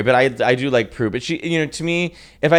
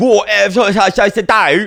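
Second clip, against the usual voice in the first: put-on London accent, higher and louder; 9 semitones higher, 5 dB louder than usual. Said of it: "Adele's like".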